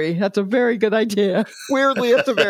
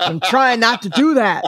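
put-on, mild, half-yelled scolding tone; 3 semitones higher than usual. Retelling hurting a sister in a fight: retelling yelling at sister. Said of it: "that's what I'm yelling at her".

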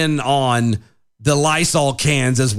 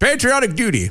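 put-on giggle, higher-pitched; 10 semitones higher than usual. Imitating a quote, giggling on the word duty like Biden. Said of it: "He went".

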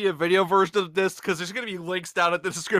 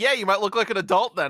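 normal talking voice

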